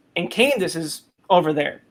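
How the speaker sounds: normal talking voice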